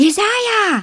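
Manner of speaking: joyful, glad, very high-pitched call. Turning to a voice behind her, she greets her best friend, calling out happily. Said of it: "rief sie erfreut".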